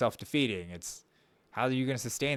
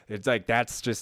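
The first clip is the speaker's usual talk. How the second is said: usual speaking voice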